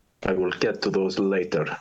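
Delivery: generic sixties movie villain voice. Answering an interviewer's question in a generic sixties Soviet Bond villain voice. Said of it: "speaking with the voice of a generic nineteen sixties Bond villain from the Soviet Union".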